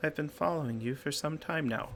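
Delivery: little wisp of a small, tiny ghost voice. Game master voicing a ghost that has been following the player: small voice. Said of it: "He speaks in his small voice".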